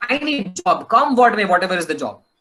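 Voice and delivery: ordinary talk, nothing marked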